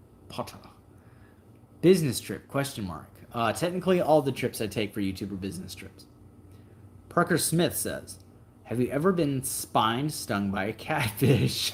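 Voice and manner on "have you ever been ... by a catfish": giggles breaking through the words. Reading out a submitted question, laughing. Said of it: "I'm sorry, I'm laughing".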